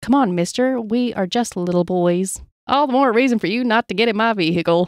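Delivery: ordinary talk, nothing marked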